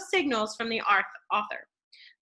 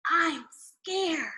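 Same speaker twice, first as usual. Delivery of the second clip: hushed, whispering voice, higher; 5 semitones higher than usual. Reading a story aloud to a class, a boy's frightened line: whispering. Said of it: "Huey whispered to me".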